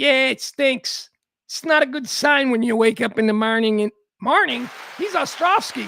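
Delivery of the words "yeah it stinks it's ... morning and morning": put-on Chicago Irish neighborhood accent. Reading a news story, speaker voices the quoted man as Bill Ostrovsky, Chicago Irish accent. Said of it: "I gave him an Irish neighborhood accent".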